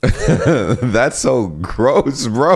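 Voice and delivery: high, slow laughing groan of disgust.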